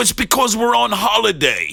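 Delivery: terrible put-on English accent, very high, swooping. Retelling a phone call posing as a senator's assistant, worst English accent. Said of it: "that English accent was the worst English accent".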